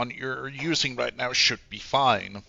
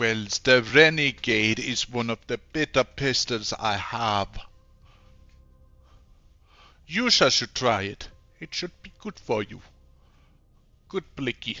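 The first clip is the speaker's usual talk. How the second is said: put-on Jamaican accent. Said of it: "I'm going Jamaican here".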